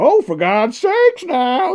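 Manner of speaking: very high, loud, very slow booming exclamation. Showing the other speaker how the impression sounds: Kelsey Grammer voice. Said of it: "So that's how it sounds".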